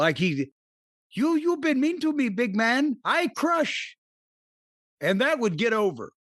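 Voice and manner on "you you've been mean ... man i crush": put-on childish baby talk. Pitching a wrestler gimmick, acting out his entrance line: put-on baby talk. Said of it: "almost talk baby talk".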